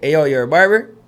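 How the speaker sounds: put-on loud, heavy Florida accent laid on thick. Retelling a phone call from a friend: imitating a thick Florida accent. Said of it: "with the biggest Florida accent".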